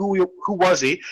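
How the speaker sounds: ordinary talk, nothing marked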